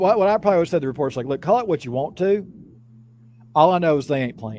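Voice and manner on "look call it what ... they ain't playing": ordinary talk, nothing marked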